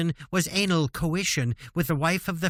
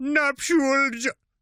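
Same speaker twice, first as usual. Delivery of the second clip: bad Indian accent, higher; 8 semitones higher, 3 dB louder than usual. Reading a quoted line aloud, trying a voice: poor Indian accent. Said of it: "That was a poor version of Indian".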